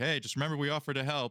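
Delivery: high shout, flung out loudly. Walking backwards with the boys, Riku shouts back to you: Riku shouting back. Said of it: "shouts back".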